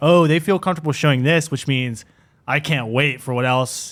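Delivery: plain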